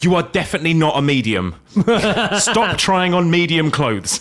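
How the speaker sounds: mock stern, blunt tone. Retelling what a guy in a queue said to his girlfriend, mock-stern voice. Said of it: "in a rather stern voice".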